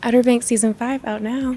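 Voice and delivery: flirtatious, playful, flirty tone. Ending a set of mood readings of a show promo line, flirty. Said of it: "we'll end on flirty".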